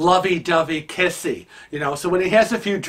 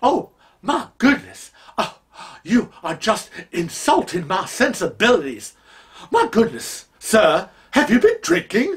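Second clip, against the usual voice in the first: swooping, offended, indignant Southern belle voice; 4 semitones higher than usual. Retelling brushing off a man getting lovey-dovey: put-on Southern belle persona. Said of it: "go into this Southern Belle uh, uh, uh, persona".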